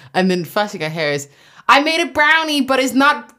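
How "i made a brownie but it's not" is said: bad put-on American accent, slow and high-pitched. Retelling what someone said about a brownie, bad American accent. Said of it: "that's my American accent".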